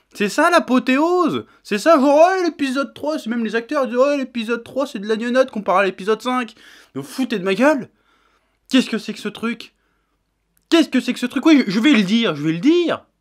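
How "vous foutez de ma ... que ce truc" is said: annoyed, worked up, faster. Speaker complaining about a tv episode's script, annoyed and worked up. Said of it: "Je suis énervé".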